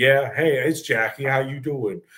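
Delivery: breezy, airy voice, acted in character. Picturing Jackie arriving at a family wedding: imitating Jackie.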